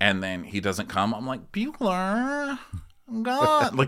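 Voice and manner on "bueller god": very high, whiny, complaining voice. Retelling calling a dog that won't come: imitating own whining at dog. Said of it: "you're whining at the dog".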